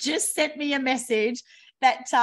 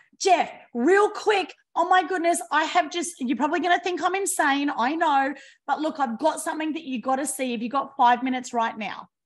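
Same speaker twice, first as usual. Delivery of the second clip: fast, urgent, pressing, rattled-off delivery; 2 semitones higher than usual. Showing how to pitch a friend on the phone: speaking fast with urgency. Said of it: "Speak faster".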